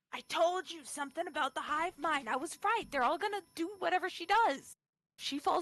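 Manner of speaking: private half-whisper under the breath. Role-playing a character half-whispering to another character, under her breath. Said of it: "Atula's gonna whisper to Vendella".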